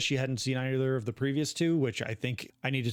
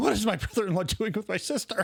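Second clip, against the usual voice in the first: scared, frightened voice, much higher pitch; 8 semitones higher than usual. Recording a sound clip for TikTok on request, in a scared voice. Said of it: "now scared voice. Scared voice".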